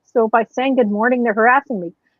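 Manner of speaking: usual speaking voice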